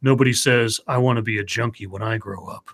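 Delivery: ominous, grim announcer voiceover narration. Retelling an old anti-drug ad's voiceover line: imitating a grim voiceover. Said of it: "grim voice comes over and says".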